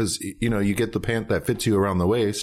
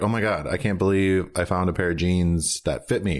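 plain

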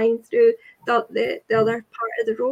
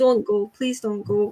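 put-on pleading voice; 2 semitones lower than usual. Retelling begging someone not to go to a party: retelling own pleading. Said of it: "And I was pleading".

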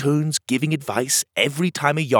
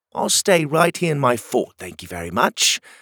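plain

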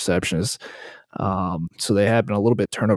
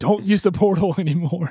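mock, very high screamed cry; 10 semitones higher than usual. Retelling how everybody reacted, imitating people screaming. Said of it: "everybody starts screaming".

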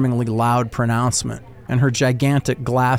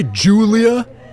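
heavy stress on the word Julia; 9 semitones higher, 5 dB louder than usual. [name] echoes Chris to the narrator so everyone around hears, stress on Julia. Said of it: "making sure to emphasize his feminization of my last name".

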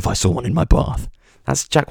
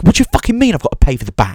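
loud, swooping, really annoyed outburst; 8 semitones higher, 6 dB louder than usual. Imitating a shopper who is really annoyed at a checkout worker: imitating an annoyed shopper. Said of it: "see somebody get really annoyed at somebody".

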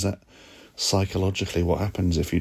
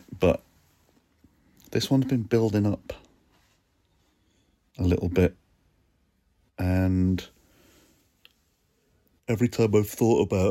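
speaking through a yawn mid-sentence; 3 semitones higher than usual. Host of a solo feelings check-in special, yawning mid-sentence. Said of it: "Sorry, I'm yawning".

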